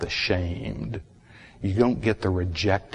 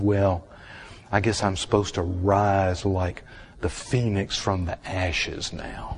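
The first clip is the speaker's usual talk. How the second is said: ordinary talk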